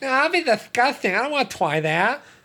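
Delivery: very high, put-on, sneering, taunting voice. Quoting what they once would have said, speaker uses their mocking-people voice. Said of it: "What was that voice?".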